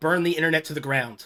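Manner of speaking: ordinary talk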